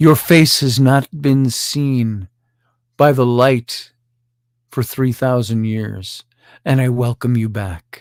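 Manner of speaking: gentle, tender, heartfelt voice. Retelling what the diggers say to what they uncovered, gentle voice. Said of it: "In a gentle voice".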